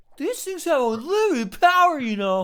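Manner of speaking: very high, loud, squealing boastful voice. Joking about a game character keeping a Chaos Emerald: Tails impression. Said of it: "it's my Tails impression".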